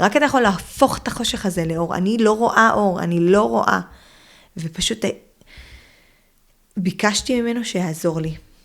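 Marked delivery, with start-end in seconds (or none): 0.0-3.8 loud, screamed crying out. Retelling screaming a prayer in the middle of the night: retelling her own screamed plea. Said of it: "וצרחתי לו".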